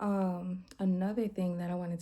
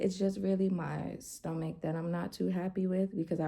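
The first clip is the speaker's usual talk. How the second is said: ordinary talk, nothing marked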